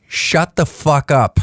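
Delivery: put-on very rude tone. Retelling a reply to a four a.m. question: very rude tone. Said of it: "what I would consider a very rude tone".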